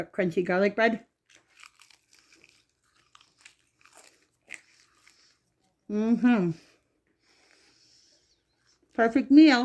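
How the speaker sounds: speaking while chewing, mouth full. Tasting the meal on camera, talking with mouth full. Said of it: "Sorry for talking with my mouth full".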